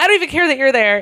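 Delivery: continued high, fast yelling.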